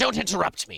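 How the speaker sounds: shrill, very high, full-volume, furious angry shriek. A game narrator voices the fey creature as it looks up, angry fey creature voice. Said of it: "The creature looks up angry, um, and says".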